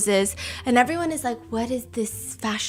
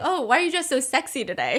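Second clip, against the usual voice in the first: fun, playful, sing-song teasing, swooping; 2 semitones higher than usual. Retelling a viral clip of Dylan Wang's remark: imitating Dylan Wang teasing playfully. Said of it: "being so fun".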